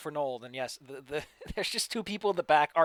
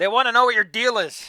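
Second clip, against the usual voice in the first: high, very loud shouted yell; 7 semitones higher, 12 dB louder than usual. In a game scene, a wizard yells from behind the players' characters: yelling. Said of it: "he yells from behind you".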